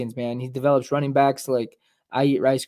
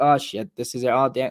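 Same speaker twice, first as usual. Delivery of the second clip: put-on panicked voice. Imagining being Drew Lock facing replacement: imitating Drew Lock panicking. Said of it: "I'm already panicking".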